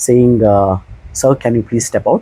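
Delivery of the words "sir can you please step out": polite tone, lower pitch. Retelling how a customer was asked to leave: imitating own polite request. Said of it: "very nice, polite way".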